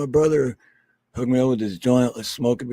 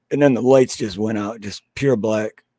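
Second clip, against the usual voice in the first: ordinary talk, nothing marked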